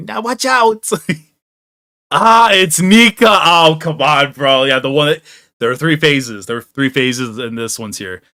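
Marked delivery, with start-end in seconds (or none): 0.0-0.9 high-pitched, little fairy voice. While gaming, the speaker redoes a voice that popped into their head: Navi voice. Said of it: "I had like the Navi from Legend of Zelda pop in my head right there with that voice".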